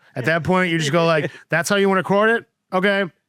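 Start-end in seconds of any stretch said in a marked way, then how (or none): 1.5-3.1 play-acted, high, snide, passive-aggressive sniping. Showing how to react when someone records it their way, passive-aggressive tone. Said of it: "or just be passive aggressive".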